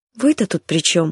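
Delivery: uncertain. Pavla answers Tritan after he says the fault is his, asking uncertainly. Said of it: "неуверенно спросила Павла".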